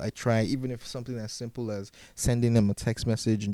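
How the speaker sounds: usual speaking voice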